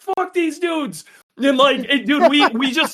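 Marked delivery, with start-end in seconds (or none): 0.0-1.0 mock furious screamed yell, high pitched. Retelling a friend screaming at race officials: imitating Dave screaming. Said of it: "Dave's screaming at the guy".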